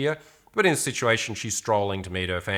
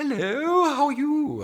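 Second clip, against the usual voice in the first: mock bright, easy, very high, light, friendly voice. Retelling own opener to a woman on the street: imitating own friendly, light greeting. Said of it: "I'm friendly and light in my vocal tonality".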